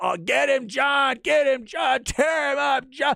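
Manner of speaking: very high, rough, wild frenzied screaming. Retelling watching a fight in a sports bar, cheering a fighter on: retelling screaming like a madman. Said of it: "I'm screaming like a madman".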